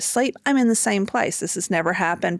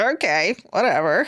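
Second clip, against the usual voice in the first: put-on scoffing, dismissive laugh. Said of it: "I'm laughing".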